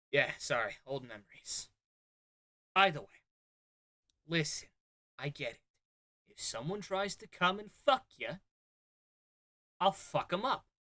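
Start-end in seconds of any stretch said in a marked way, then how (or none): 2.7-10.5 put-on Boston accent. An officer lays out his relationship with a subordinate, in a Boston accent. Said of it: "He talks like a guy from Boston".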